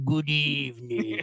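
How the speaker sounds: spooky classic horror-movie host voice. Trying out a horror movie intro for the show: horror movie host intro voice. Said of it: "horror people, like".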